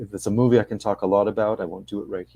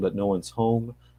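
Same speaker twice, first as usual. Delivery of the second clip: plain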